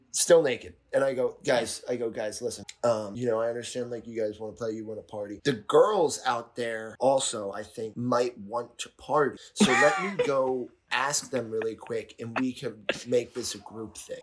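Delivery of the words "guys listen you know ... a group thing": ordinary talk, nothing marked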